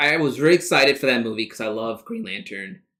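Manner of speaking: voice cracking. In a conversation about the Green Lantern movie, voice cracking. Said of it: "My voice just cracked".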